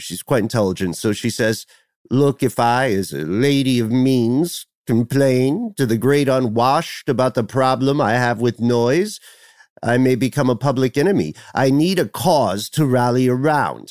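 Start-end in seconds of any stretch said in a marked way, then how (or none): 2.1-13.9 sinister, evil, villainous, scheming woman voice, put-on. Imagining what she says in her mansion: imitating her in an evil voice. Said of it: "I don't know why I made her sound so evil".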